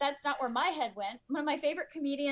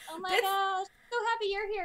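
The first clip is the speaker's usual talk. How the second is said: mock fangirl gushing, pitched higher; 6 semitones higher than usual. Acting out the two speakers greeting each other: imitating gushing fangirling. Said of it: "I think we're fangirling on each other".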